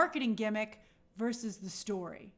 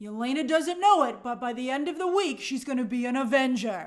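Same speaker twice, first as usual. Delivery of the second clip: movie trailer announcer voiceover delivery; 4 dB louder than usual. Imagining an old-style ad campaign for the film: movie trailer voice. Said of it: "the trailer voice goes".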